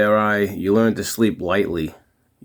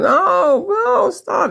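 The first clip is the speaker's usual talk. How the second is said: very high, swooping, top-of-the-lungs scream; 4 dB louder than usual. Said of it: "screaming at the top of his lungs".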